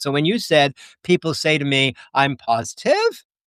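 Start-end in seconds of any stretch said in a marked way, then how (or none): 2.1-3.2 "positive" lifts up at the end, question-like. Echoing how someone else just said a phrase: question-like rise on positive. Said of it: "your voice trailed up".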